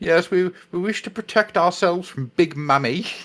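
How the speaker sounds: prim, proper, slow put-on voice. Imagining a prim and proper Farseer speaking: prim and proper Farseer voice. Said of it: "a prim and proper Farsi just going".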